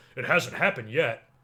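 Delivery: put-on douchey, snotty know-it-all tone. Retelling a wrestler's reply to a compliment: imitating a douchey voice. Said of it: "in a real douchey voice".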